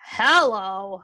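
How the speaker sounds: acted, weary, drawn-out, exasperated tone. Mimicking how some people answer the phone, mock-exasperated hello. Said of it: "It sounds like you're exasperated".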